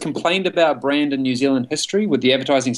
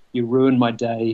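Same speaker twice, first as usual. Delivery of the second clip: put-on muttering under breath, lower pitch; 3 semitones lower than usual. Retelling a cricketer's remark at the very end of a recording; retelling a mumble under his breath. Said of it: "he just mumbles under his breath".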